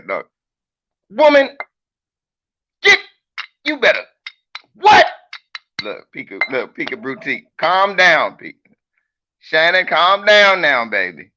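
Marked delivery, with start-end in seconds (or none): 1.2-4.0 pretend bossy, forceful tone, higher and louder. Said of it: "when I talk like that".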